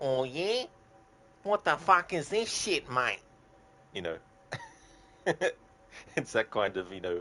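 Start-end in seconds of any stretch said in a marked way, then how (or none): 0.0-3.2 over-the-top Australian accent, very high pitch. Showing an old impression, unlike normal speech, in an exaggerated aussie accent impression. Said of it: "my Aussie accent impression I used to do, where it's like".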